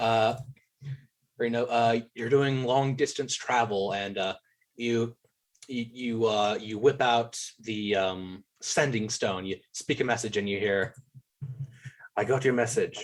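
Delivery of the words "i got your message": echoing voice with heavy reverb. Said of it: "The reverb".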